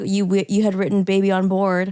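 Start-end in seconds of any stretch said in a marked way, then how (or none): none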